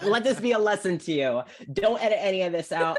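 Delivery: fast, laughing, mock lecturing tone.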